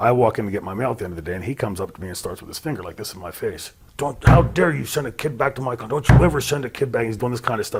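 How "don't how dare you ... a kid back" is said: mock furious, angry screaming, pitched high. Teacher retelling how the principal confronted them after school, retelling a principal's screaming. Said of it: "screaming at me".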